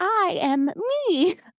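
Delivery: cute, very high, trilly, auto-tuned little robot voice. Retelling what a character says: cute little robot voice. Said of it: "like, auto-tuned little trilly voice".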